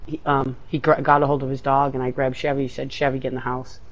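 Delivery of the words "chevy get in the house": usual speaking voice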